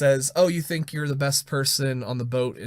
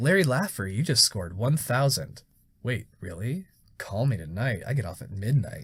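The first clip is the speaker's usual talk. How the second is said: mechanical, robotic arcade announcer delivery; 3 semitones lower, 3 dB quieter than usual. Speaker retells a video game's announcer after a perfect score, robot announcer voice. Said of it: "Like the just like the robot announcer voice".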